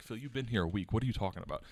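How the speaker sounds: usual speaking voice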